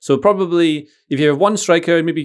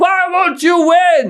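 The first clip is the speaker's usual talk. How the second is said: acted very high, very slow, drawn-out scream; 4 dB louder than usual. Imitating a guy screaming at the players in training: imitating someone screaming. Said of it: "this guy screaming at them".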